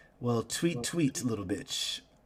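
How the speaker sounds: sly, slow, drawn-out, smug tone. Voicing Celine's reply to a player's character: Celine smirking. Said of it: "she kinda smirks and says".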